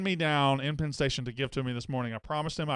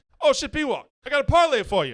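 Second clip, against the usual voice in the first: failed put-on British accent, shrill, very high, very loud; 12 semitones higher, 8 dB louder than usual. Retelling a British guy greeting him at Penn Station, bad British accent. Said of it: "I can't".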